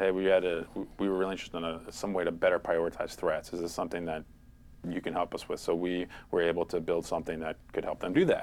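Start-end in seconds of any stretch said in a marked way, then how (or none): none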